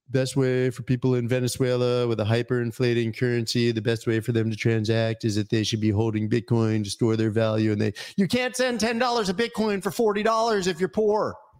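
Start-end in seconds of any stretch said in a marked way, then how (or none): 0.1-7.7 teasing, acted-out mocking self-parody tone. Making fun of his own past words about bitcoin: mocking imitation of his past self. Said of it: "I'm making fun of myself".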